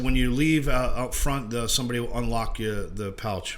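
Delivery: ordinary talk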